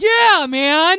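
very loud, high, thrilled, excited cheer. Imitating a moviegoer's cheer at the screen: imitating a loud excited yell. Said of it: "that was really loud".

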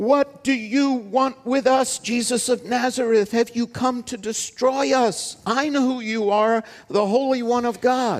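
high-pitched shriek in a strange, not-own voice. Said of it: "shrieks out with not his own voice".

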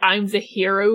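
ordinary talk, nothing marked

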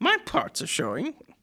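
poorly done, very high, stiff, prim robot voice. Chatting with a friend about a movie, quoting the robot; terrible C-3PO impression. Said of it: "That's my terrible C-3PO".

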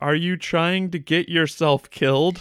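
put-on weird, strange, high old-woman voice. Discussing an earlier scene, the speaker mimics her weird line delivery. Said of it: "there is a really weird delivery she gives".

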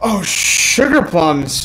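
flustered, caught off guard, panicked blurt. Blurting a random last thought when asked on the spot: panicked blurt. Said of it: "That was my panicked, "What do I say?"".

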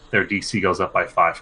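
ordinary delivery

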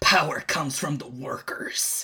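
low, growling werewolf-like beast voice. In a turn-based game scene, the speaker voices a werewolf, growling. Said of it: "it growls and goes".

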